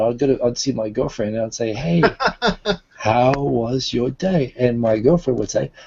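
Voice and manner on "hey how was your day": very slow, put-on conversation-class teacher manner. Retelling greeting his girlfriend after work, still in Eikaiwa teacher mode. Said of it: "I'm still in Eikaiwa mode".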